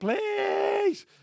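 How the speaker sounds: very high, loud, bossy, demanding scream. Act out how she used to say please to us, imitating a demanding, screamed please. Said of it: "she used to use please like a demanding, please".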